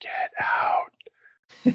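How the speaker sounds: whispered softly and breathily. Retelling how a cousin whispered into the room: imitating a whispered "get out". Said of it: "whisper into the room, like".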